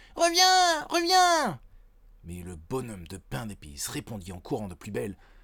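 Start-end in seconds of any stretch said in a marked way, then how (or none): 0.2-1.6 very high-pitched, shrill yelling. The old man and old woman chase the gingerbread man: shouting. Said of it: "qui hurlaient aussi".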